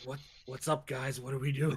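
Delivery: offhand, unaware, casual tone. Acting out Callum wandering in on the whispering group: voicing Callum. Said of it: "He's like".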